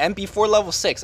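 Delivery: BEFORE emphasized.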